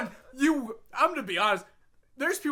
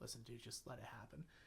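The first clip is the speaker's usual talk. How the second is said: very soft, breath-only half-whisper, very close; 12 semitones lower, 29 dB quieter than usual. Retelling what an opponent said during a wrestling match: imitating a half-whisper. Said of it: "he whispered in my ear".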